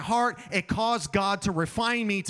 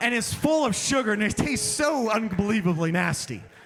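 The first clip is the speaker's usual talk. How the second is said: ordinary delivery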